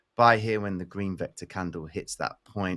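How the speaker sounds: very dull, low, flat, droning monotone. Demonstrating the dull way to explain a trading system, monotone. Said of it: "talk the hybrid system in the most monotone way and be like".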